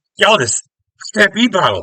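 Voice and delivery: many voices shouting at once, very high-pitched. Telling a story, the speaker acts out what everyone yells, retelling a group yell. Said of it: "this everyone yells".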